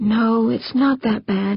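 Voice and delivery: soft cooing tone. A woman answers a man who whimpers that he is ruined, cooing. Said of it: "she cooed".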